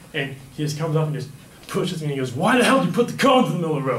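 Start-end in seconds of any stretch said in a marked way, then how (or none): 2.3-4.0 put-on loud, furious, in-your-face confrontational outburst. Retelling how a guy came up and confronted him, acting out the guy getting mad. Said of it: "just got all mad at me".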